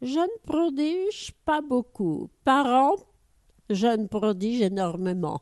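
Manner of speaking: put-on Russian accent. Retelling a master's reply to a journalist, in a Russian accent. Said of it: "avec son accent russe".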